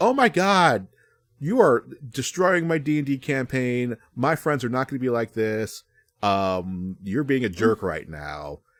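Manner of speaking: huffy, put-out griping with a drawn-out "um". Retelling how the listener complained about a D&D campaign, imitating someone getting huffy. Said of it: "you're getting all huffy with me".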